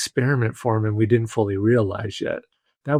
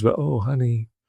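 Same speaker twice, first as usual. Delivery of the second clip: put-on gentle tone. Retelling how a man's wife answered him at home, imitating her gentle tone. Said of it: "in a more gentle way than the other two".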